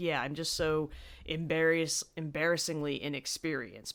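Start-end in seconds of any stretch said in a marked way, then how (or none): none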